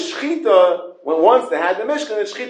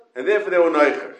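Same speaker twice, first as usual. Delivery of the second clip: ordinary talk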